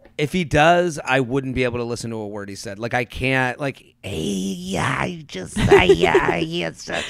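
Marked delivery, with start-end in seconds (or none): 4.0-7.1 slow, creaky, croaky half-whispered talk. Mocking how the show character Steve talks: imitating Steve's half-whisper talk. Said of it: "His, like, whisper talk".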